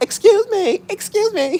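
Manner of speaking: drawn-out, high-pitched, demanding voice. Mocking how some people sound when they get mad, in a mock-mad Karen voice. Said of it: "they sound like a Karen when they get mad".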